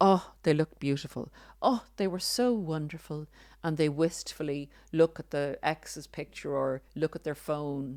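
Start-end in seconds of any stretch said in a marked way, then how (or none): 0.0-3.3 sarcastic, put-on gushing wistfulness. Imitating someone who suddenly praises a former partner, sarcastic mock gushing. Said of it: "I'm being very sarcastic and slightly humorous".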